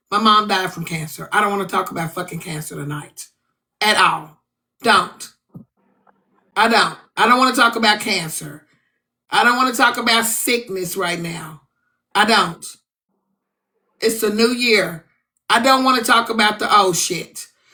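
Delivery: thoroughly upset and pissed-off voice. Refusing to talk about cancer tonight in a full room: very upset. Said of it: "but I'm very upset right now".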